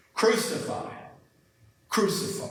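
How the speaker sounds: high, hateful, whispered cry from a group.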